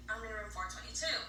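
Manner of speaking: ordinary talk, nothing marked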